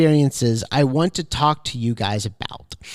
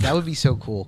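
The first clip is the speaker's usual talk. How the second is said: ordinary talk, nothing marked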